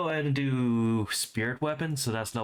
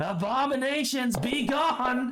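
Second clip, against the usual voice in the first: very high, ringing, full battle yell; 12 semitones higher than usual. Casting Word of Radiance against the Queethix in character: yelling. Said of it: "And I'm just yelling".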